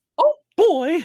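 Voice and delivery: very high, loud, squeaky voice. Challenged by friends, attempting a Mickey Mouse impression on the spot. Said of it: "that was decent".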